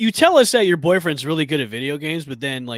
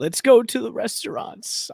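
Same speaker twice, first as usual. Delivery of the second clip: slow put-on old man voice; 7 semitones higher, 3 dB quieter than usual. Quoting what he and his wife would say: put-on old man voice. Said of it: "I don't know why I'm talking like an old man".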